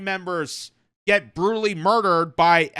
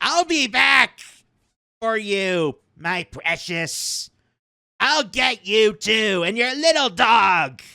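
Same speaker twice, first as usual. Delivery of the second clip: slow, wicked cartoon witch voice. Speaker mocking a man's rant by comparing it to cartoon witches; Looney Tunes cartoon witch voice. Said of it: "Looney Tune cartoon witches".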